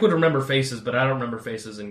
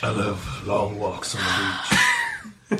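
slow, swooping sing-song voice; 3 semitones lower than usual. Trying again after being asked to do the voice: doing Anton's voice. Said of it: "can you do his voice real quick?".

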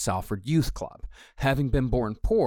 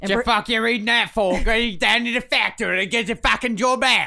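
put-on British accent, very high, shrill and loud; 11 semitones higher, 6 dB louder than usual. Quoting what someone once said, speaker uses a put-on British accent. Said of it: "when I do a British accent".

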